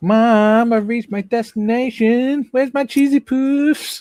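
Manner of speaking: very high, slow, loud, drawn-out character voice. Retelling what the sat nav said on arrival: Eric Cartman voice. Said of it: "one of the voice actors was Eric Cartman".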